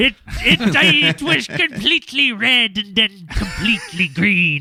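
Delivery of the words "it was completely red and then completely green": put-on pirate voice, higher. Reading a witness account aloud: pirate voice. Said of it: "I couldn't help but read it as a pirate".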